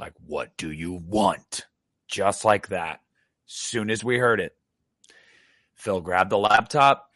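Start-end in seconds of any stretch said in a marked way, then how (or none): 0.3-1.7 very stern, slow, deliberate man's voice. Retelling what a man's voice clearly said, retelling a stern man's voice. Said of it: "he like was very stern about it".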